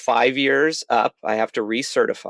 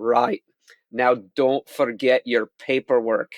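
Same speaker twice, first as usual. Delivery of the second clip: put-on accent of Scotland. The speaker retells what the exam proctor told them, in a Scottish accent. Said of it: "that was a pretty good Scottish accent".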